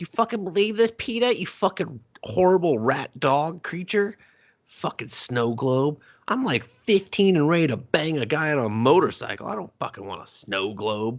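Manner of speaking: put-on high-pitched, angry, mouthy teenage trash talk. Retelling how the daughter tosses a gift away: imitating a teen trash-talking a dog. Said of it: "talks shit to the dog".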